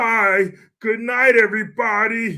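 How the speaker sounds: slow, drawn-out, stumbling delivery. Retelling a debate opening, imitating John Fetterman. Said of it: "Sounding like, uh, what was it, Doctor Nick".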